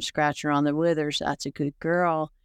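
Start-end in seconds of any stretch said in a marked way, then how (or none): 1.2-2.3 acted-out whispering. Showing how the horse was soothed while it ate: reenacting whispering to a horse. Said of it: "whisper a sweet nothing to a horse".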